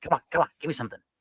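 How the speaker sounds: restless, impatient, eager pleading in a high pitch. Imitating a restless teenage boy begging for something to do: imitating David's eager impatience. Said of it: "He's like".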